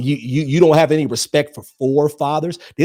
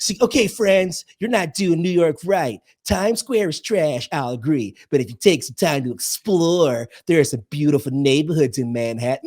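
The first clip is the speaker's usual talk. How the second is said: put-on theatrical New York accent, lecturing Broadway girl's voice. Acting out a message about exploring New York: Caitlin Gracie voice. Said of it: "I just did her voice to a T".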